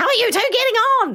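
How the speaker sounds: play-acted screeching voice, very high. Speaker retells a producer yelling a question at two people, screeching producer voice. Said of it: "Like screeching".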